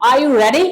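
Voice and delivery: pitch climbs up at end on ready. Explaining intonation with are you ready: rising pitch on ready. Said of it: "आवाज क्या हो रही है, ऊपर की तरफ जा रही है।".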